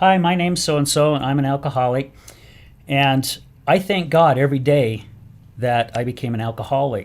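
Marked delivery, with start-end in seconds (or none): none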